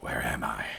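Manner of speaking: hissing, sibilant, hissed-out voice. Voicing a groggy rot-covered figure waking up: sibilant voice. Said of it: "like, a sibilant voice".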